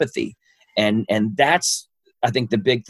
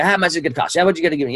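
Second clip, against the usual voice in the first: very fast, high carnival-barker patter; 5 semitones higher than usual. Imitating a used car salesman customer, talking a mile a minute like a carnival barker. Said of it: "he's talking a mile a minute, like a carnival barker".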